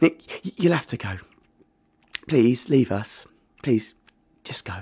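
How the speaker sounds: faint, almost voiceless, barely audible, pleading. With her son weeping after the fight, [name] asks Nick to leave, barely audible. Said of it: "[name]'s voice was barely there".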